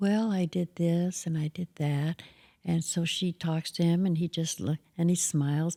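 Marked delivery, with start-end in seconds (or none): 0.0-2.2 quiet, small, soft voice, slow and drawn out. Retelling an interview where Marlon answers the interviewer, Marlon's soft little voice. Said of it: "and a soft little voice".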